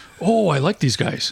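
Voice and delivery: put-on Greek accent. Retelling George on a film set meeting the actors, in George's Greek accent. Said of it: "In a Greek accent, of course".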